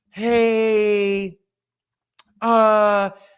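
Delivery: put-on soft, sweet-sounding voice. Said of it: ""Hey," that's [name]".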